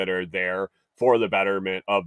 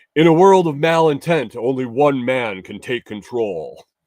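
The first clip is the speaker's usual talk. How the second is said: action movie trailer narrator voice, louder; 5 semitones higher, 7 dB louder than usual. Trying again after a stumble, in an action movie trailer voiceover. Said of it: "in an action movie trailer voiceover".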